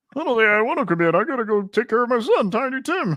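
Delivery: very high, squeaky frog puppet voice. Speaker given impression number one to perform, Kermit the Frog voice. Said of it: "we have you doing Kermit the Frog".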